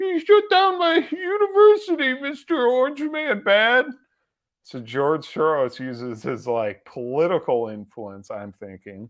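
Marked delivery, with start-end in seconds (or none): 0.0-3.9 put-on fake crying voice, higher and louder. Picturing a rival complaining about a shut-down university: imitating George Soros crying. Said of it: "I can picture him crying".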